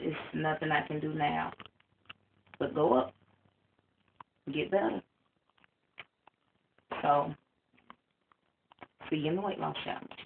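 fighting back tears. After stepping on the scale, saying the starting weight: holding back tears. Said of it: "trying my best not to cry".

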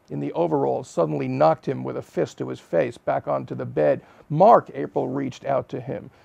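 ordinary delivery

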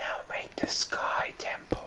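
slow, unvoiced whisper under the breath. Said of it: "You were whispering".

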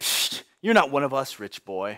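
sneering, jeering taunt, acted out. Acting out the people rejecting an outsider: acted sneer. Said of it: "I can imagine them sneer and say".

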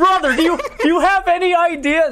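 shouting. Streamer asks why nobody said a game was coming to console; yelling. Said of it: "Sorry, I'm yelling right now".

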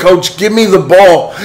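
all-out, loud, high-pitched yelling scream. Retelling what they screamed at their coach during a game, screaming. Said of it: "And I'm screaming".

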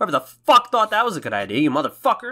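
pretend furious yelling. Ranting at whoever accused them of stealing speedrun footage: mock angry rant. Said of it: "seriously, I'm fucking pissed".

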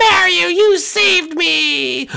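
high, slow, tearful, grateful crying voice.

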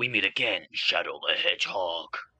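slow, brooding hero voice.

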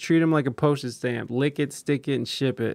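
ordinary delivery

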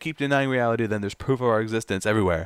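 ordinary delivery

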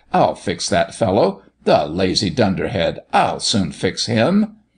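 plain

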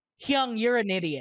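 put-on cheeky, playful teasing tone. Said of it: "the vibe that I get from".

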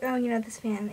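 usual speaking voice

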